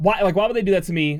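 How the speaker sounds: ordinary talk, nothing marked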